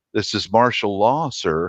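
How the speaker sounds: soft, quiet under-breath mutter. Retelling what a guard searching him said: imitating a soft under-breath line. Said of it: "He said it very softly under his breath".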